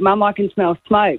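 ordinary talk

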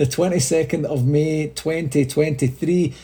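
speech through laughter. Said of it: "the reason I'm laughing right now".

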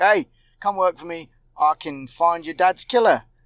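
ordinary talk

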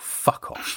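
mock muttering under breath. Retelling a woman walking past their sign: imitating muttering under her breath. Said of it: "just under her breath".

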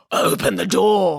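rough, gruff character voice. Reading a story aloud, the voice knocking at the piglets' door: gruff voice. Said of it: "came a gruff voice".

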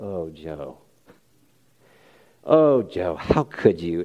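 low, soft, gentle, disappointed, hurt not angry.

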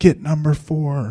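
mock screaming. Retelling a basketball game, screaming guarding assignments: retelling screaming at players. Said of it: "I'm screaming at them".

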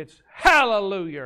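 loud Appalachian West Virginia mountain accent. Showing how someone really from the West Virginia mountains says the word, West Virginia mountain accent. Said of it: "if you're really from the mountains of West Virginia".

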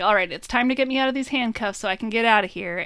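plain

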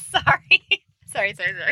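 speaking through laughter. Apologizing to the other speaker for interrupting, laughing while talking. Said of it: "you are laughing right now".

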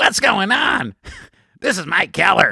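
mocking put-on voice, an impression. Teasing the other speaker by talking like him, imitating his voice. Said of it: "now I'm going to talk like you".

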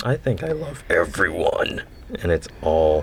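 awful, horrendous put-on demon voice. Answering a checklist item about glib charm, the speaker uses a horrendous demon voice. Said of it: "your horrendous demon voice".

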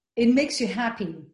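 ordinary talk

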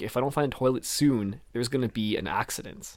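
ordinary talk

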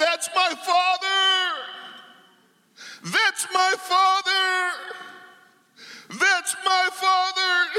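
high, slow, mock shouting over and over. Retelling a vision, shouting own words from then: retelling a shout. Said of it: "And I begin to shout".

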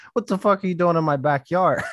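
put-on angry tone. Retelling what a pissed-off neighbor said: imitating an angry neighbor. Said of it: "this dude was pissed".

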